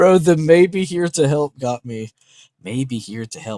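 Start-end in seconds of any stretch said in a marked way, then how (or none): 2.6-3.6 sinister, villainous evil voice. A host repeats a phrase that just got him, in an evil voice. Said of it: "I just hear that like evil voice".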